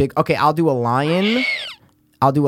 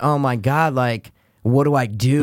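ordinary talk

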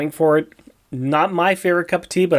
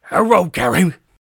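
put-on cartoon dog voice, higher; 3 semitones higher than usual. Greeting Carrie at the start of a comic talk: Scooby-Doo voice. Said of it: "This is my voice of Scooby-Doo".

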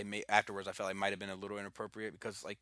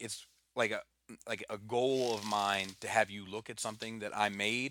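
ordinary talk

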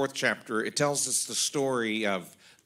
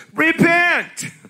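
very loud, shrill, high joking shout; 14 dB louder than usual. Reading a verse from the Amplified Version as a joke: saying it really loud. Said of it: "It's you say it really loud".

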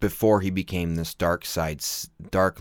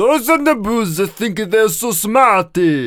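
belted way up high with an Italian flavour; 14 semitones higher, 9 dB louder than usual. Imitating Boss Nass answering a question: Italian-sounding Boss Nass voice. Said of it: "That's Italian still".

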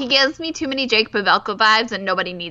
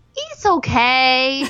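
the word okay stretched and drawn out; 3 semitones higher than usual. Retelling what a bachelor kept telling people: Juan Pablo impression. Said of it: "your Juan Pablo impression again".

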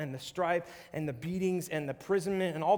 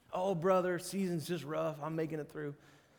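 put-on southern drawl; 3 dB quieter than usual. Imitating someone using seasons as an excuse: Matthew McConaughey voice. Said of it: "my best Matthew McConaughey impression".

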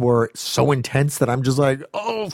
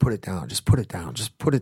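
put-on whisper, lower pitch and quieter; 5 semitones lower, 5 dB quieter than usual. Retelling how a man whispered to a kid holding an RPG: imitating a whisper. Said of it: "And he's whispering".

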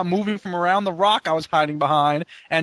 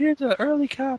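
put-on hot girl voice, higher pitch; 7 semitones higher, 3 dB quieter than usual. Imagining how a hot girl gave an early game copy: imitating a hot girl. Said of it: "the hot chick who's like".

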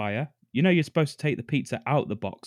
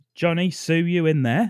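put-on Cockney accent, raised and high, calling out; 6 semitones higher, 5 dB louder than usual. Retelling a man calling to his neighbours' two kids, in a cockney accent. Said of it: "In his fucking Cockney accent".

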